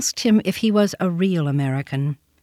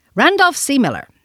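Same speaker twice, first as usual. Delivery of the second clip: sharp, high, sharply spoken delivery; 7 semitones higher, 4 dB louder than usual. A small boy answers a man who asked his name, sharply. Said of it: "said the boy sharply".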